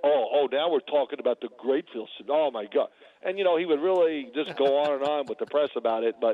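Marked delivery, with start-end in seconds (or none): none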